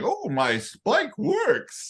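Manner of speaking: mock cartoon scientist voice, high, slow, sing-song, proud.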